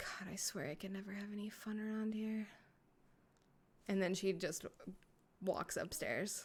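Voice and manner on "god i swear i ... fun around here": quiet grumbling, muttered under the breath, getting quieter. Voicing a character who mutters after a heavy sigh: muttering under her breath. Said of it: "under her breath".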